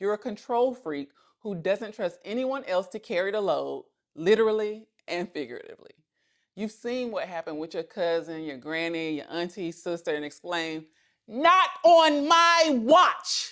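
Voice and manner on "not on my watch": high, booming, slow, drawn-out proclamation. Calling out a control freak, the speaker exclaims in an Iyanla voice. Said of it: "In my good Ayanla voice".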